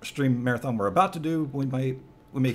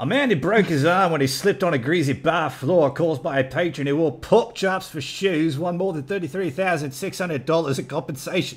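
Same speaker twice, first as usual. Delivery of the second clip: cringey, loud, bad put-on Australian accent; 4 semitones higher, 5 dB louder than usual. Reading a news story aloud to the others: cringe-worthy put-on accent. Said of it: "cringing at my accent".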